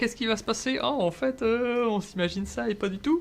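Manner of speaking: high, mock-amazed, wide-eyed gasping.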